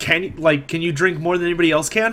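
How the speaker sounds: ordinary delivery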